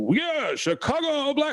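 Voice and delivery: very high, sing-song, swooping stadium announcer call. Imitating the stadium announcer calling the team: Gene Honda announcer voice. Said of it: "he's the announcer, and he does, like".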